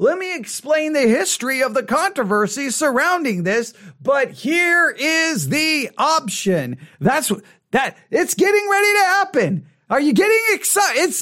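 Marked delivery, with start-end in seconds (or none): 8.1-11.2 tongue-in-cheek fake excitement, lightly sarcastic, pitched up. Commenting on a sermon while waiting for an issue to be addressed: sarcastic. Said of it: "now I'm being a little sarcastic".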